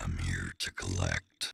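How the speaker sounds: gritty demonic voice. The second performance ending played back for comparison, in a deep gritty demon voice. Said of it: "I love the deep, demony, like gritty voice".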